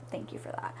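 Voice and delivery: soft, unvoiced whisper.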